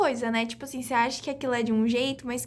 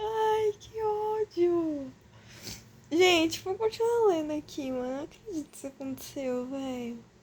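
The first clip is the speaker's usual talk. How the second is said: tearful, higher, much quieter, talking through tears; 4 semitones higher, 3 dB quieter than usual. Reacting to a sad turn while reading a story to viewers, crying while talking. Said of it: "Porque eu tô chorando".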